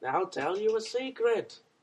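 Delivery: high, loud, big cartoon villain voice. Doing a bit as Skeletor and starting a joke, in a Skeletor voice. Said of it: "I don't know if that's what Skeletor sounds like".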